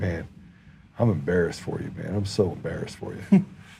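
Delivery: mock dead-serious, bone-dry, flat deadpan delivery. Retelling own words to a man in a conversation: imitating own deadpan delivery. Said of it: "I did it with a straight face".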